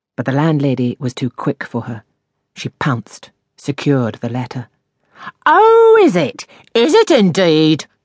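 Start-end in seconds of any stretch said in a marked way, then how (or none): 5.5-7.8 very high, very slow, drawn-out, swooping cry. The landlady, having snatched a tenant's letter, retorts, cried out. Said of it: "she cried".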